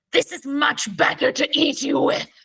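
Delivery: high, ogre-like, monstrous hag voice. Voicing a hag turned ogre, towering over a player: ogre-like hag voice. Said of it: "she just goes".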